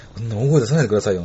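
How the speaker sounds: plain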